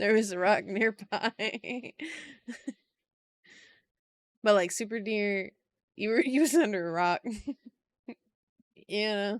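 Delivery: laughing, cracking up mid-sentence. Joking about a made-up story, then cracking up: laughing while talking. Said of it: "Sorry, I cracked myself up".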